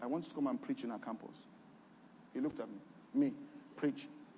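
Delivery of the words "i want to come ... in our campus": quiet, quieter and lower. Speaker retells answering a man who asked what they wanted, retelling saying it quietly. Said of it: "I'd say quietly".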